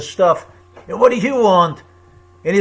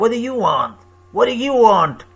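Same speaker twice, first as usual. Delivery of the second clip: put-on Italian mobster voice, higher; 2 semitones higher than usual. Retelling being asked what they wanted, Italian mobster impression. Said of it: "Like some Italian mobster".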